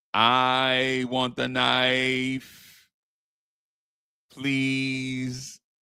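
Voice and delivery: very slow, stretched-out, with drawn-out I. Doing an impression from The Golden Child movie: The Golden Child impression. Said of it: "Here's my golden child impression".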